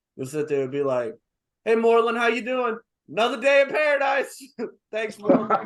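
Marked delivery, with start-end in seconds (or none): 1.7-5.5 booming, very high, loud call-out. Retelling how the principal greets the speaker while walking away, imitating his loud voice. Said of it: "but he's very loud".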